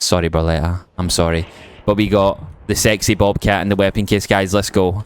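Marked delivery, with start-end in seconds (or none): none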